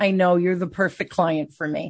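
ordinary delivery

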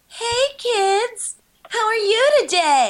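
put-on very high, very slow condescending kid-talk voice. Mocking how a children's show host talks to kids: condescending kids' host voice. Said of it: "then you're just being condescending".

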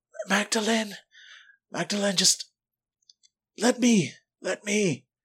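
weak, high, frail and feeble voice. Voicing Miss Pearl calling from the back of the room: weak voice. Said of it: "Her voice weak".

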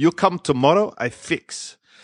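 put-on Russian-accented broken English. Quoting the man who offered to fix the speaker's hair, Russian accent imitation. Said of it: "how come he doesn't have a Russian accent".

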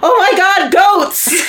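acted, sudden, very loud, very high, drawn-out yell. Retelling a sudden outburst while watching a horror movie: imitating own loud yell. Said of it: "very loudly, I yell".

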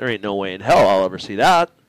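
deep, low grumble. Retelling a doubtful reaction to a race plan, imitating muttering under breath. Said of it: "under my breath".

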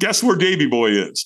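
plain

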